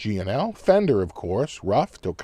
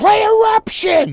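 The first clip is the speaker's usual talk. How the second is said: shrill scream, very high and very loud; 9 dB louder than usual. Retelling what he yelled at the end of the big finish: imitating someone screaming. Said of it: "he screams at me".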